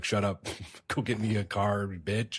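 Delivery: put-on very slow, belittling, demeaning delivery. Retelling a game character insulting a woman: imitating someone negging a woman. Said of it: "negging this poor woman and being like".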